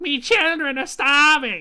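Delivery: shrill, extremely high-pitched voice. Retelling what a man said as the speaker walked into his house, in a very high-pitched voice. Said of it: "in just like the most high pitched voice".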